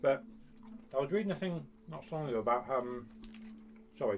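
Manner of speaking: talking with mouth full. Chatting with another person about money, the speaker is talking with mouth full. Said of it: "talking with my mouth full here".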